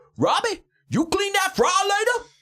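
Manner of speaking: very high, sweet Southern woman's voice. Speaker acts out what a woman at work used to say, imitating Dolores. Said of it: "And she would say it just like that".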